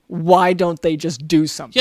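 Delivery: normal talking voice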